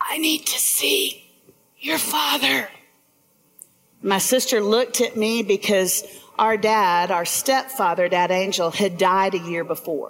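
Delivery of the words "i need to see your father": high, soft, faint half-whisper. Retelling what her mother said on waking after surgery: imitating a half-whisper. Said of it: "she kind of whispered".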